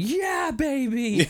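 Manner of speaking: high cheer with the last word stretched out. Retelling a scene, imitating Richard Grant cheering. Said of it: "I just love Richard Grant going".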